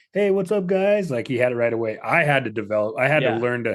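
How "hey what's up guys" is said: very high, bright, clear, enunciated chirpy voice. Describing how Jason always sounded, imitating Jason's bright chirpy greeting. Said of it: "clear, enunciated, like bright, chirpy".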